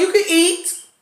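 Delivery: irritated, pissed-off tone. Retelling a remark to a staring couple: imitating own annoyed retort. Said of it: "So I kinda got pissed off".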